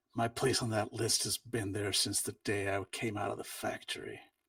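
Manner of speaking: bitterness running through every word. Acting out his reply over the traffic noise: bitter edge to the voice. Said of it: "bitter edge to it".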